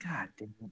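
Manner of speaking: soft, quiet whisper.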